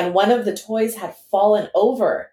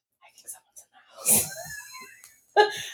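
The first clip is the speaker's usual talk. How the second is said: frightened, scared, breathy whisper; 10 dB quieter than usual. Retelling being upstairs with the baby, retelling a scared whisper. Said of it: "I'm like whispering because I'm so scared".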